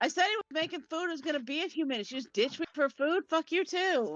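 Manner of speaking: furious shout pitched very high. Voicing a character who yells at a companion for leaving: yelling angrily in character. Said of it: "And I just yell at him".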